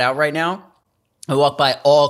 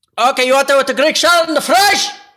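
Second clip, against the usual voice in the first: very high-pitched, loud yell; 11 semitones higher, 5 dB louder than usual. Role-playing a phone order as the diner worker: imitating the diner guy yelling.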